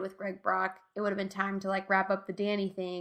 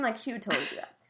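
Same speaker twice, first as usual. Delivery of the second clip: plain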